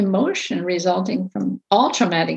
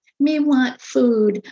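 put-on high, broken, babyish toddler baby talk; 5 semitones higher than usual. Explaining how children may talk like a baby, imitating a four-year-old's baby talk. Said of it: "they might talk like a baby".

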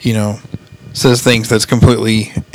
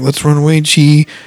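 put-on crying, upset voice, higher; 5 semitones higher, 3 dB louder than usual. Retelling what he says as he runs outside with her, imitating someone crying, upset. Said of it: "he's upset and he's crying and he's like".

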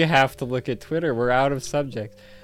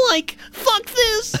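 put-on cartoon slacker voice. Retelling a scene, quoting Shaggy in his voice: Shaggy voice. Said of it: "and then Shaggy goes".

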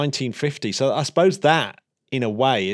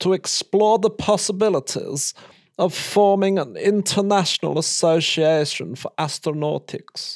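pitched-up, villain-style German-accented English; 6 semitones higher than usual. Reading a quoted passage aloud to co-hosts, german accent in english. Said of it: "That was a perfect German doing an English accent".

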